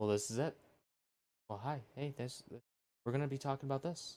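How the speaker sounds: game-show showcase voiceover delivery. Mocking a tech presentation, imitating Mark Zuckerberg like a game voiceover. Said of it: "Mark Zuckerberg sounds like someone voiceover".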